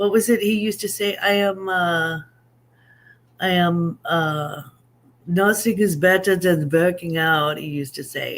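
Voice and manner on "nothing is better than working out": bad, poorly done Austrian accent. Quote what he used to say, in a bad Arnold Schwarzenegger Austrian accent. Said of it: "that's supposed to be an Austrian accent".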